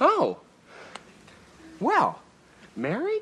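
high, stunned, gasped-out surprise. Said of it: "you sound so surprised".

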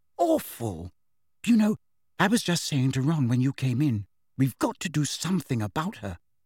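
ordinary delivery, nothing marked

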